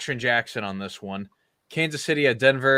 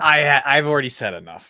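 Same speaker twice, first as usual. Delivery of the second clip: mock cheeky, sassy, brushing off, raised pitch; 3 semitones higher, 4 dB louder than usual. Quoting someone's short reply to the group: imitating a sassy tone. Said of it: "In a sassy tone".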